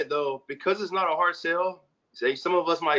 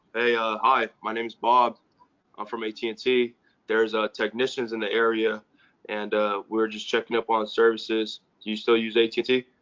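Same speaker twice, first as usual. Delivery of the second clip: flat put-on monotone voice, much lower pitch; 6 semitones lower than usual. Speaker acts out Bob greeting a customer, imitating Bob's monotone. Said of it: "his pitch is very, very monotone".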